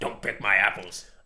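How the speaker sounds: creepy, a bit scary delivery. Recalling the talking tree from The Wizard of Oz: creepy Wizard of Oz tree voice. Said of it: "really creepy and a little bit scary".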